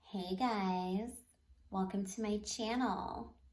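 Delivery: slow, drawn-out influencer-style delivery. Trying out a channel greeting again: Kim Kardashian vibe. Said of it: "giving the fucking Kim Kardashian vibe".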